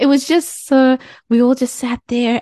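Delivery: high-pitched, joyful, laughing voice. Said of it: "you could probably hear the joy in my voice".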